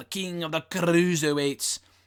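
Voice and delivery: put-on speaking in a Scottish accent. Recapping a heel's run, saying his nickname in a scottish accent. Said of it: "That's more of a Scottish accent".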